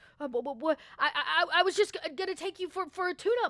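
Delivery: nervous stammering. Voicing a guard backing away, hands up: nervous stammering guard. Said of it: "he kinda keeps his hands up".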